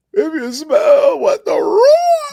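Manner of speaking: very high, loud yell with cracking voice. Retelling a wrestling show moment: imitating The Rock losing his voice. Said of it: "The Rock lost his voice".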